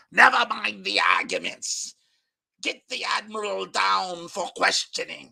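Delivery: sinister, evil villain voice. Redoing the line after deciding it needs a more evil voice. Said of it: "that should be a more evil voice".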